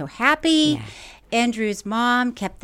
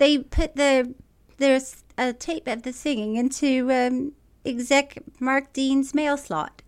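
slow, put-on fake British accent; 4 semitones higher than usual. Retelling a line again after being asked: put-on British accent. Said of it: "Try it one more time with a British accent".

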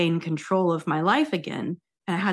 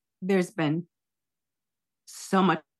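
voice holding back tears. Answering what is going through their head, holding back tears. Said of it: "I'm trying not to cry".

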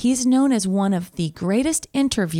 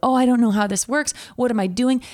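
put-on fumbling, bumbling fool voice; 3 semitones higher than usual. Retelling how Studs Terkel fumbled at interviews: imitating Studs Terkel playing the fool. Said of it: "he would play the fool".

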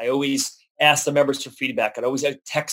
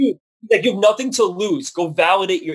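imitated higher-pitched yelling; 6 semitones higher than usual. Retelling how the company owner yelled at him on the phone, retelling someone yelling. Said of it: "he's just yelling at me".

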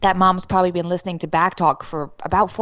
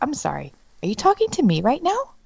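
play-acted, ice-cold, high voice with swooping pitch; 5 semitones higher than usual. Retelling what gets said at home: imitating own ice-cold tone. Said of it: "I'm cold as ice".

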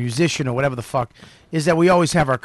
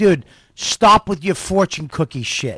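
re-enacted, put-on yelling; 2 semitones higher than usual. Speaker recounting yelling at someone earlier today; retelling a yell. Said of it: "I was just fucking yelling at him".

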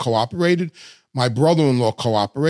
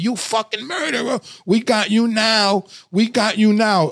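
mock high-pitched scream; 8 semitones higher than usual. Recounting FBI agents screaming at the speaker in a van after an arrest, retelling agents screaming. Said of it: "they're screaming at me".

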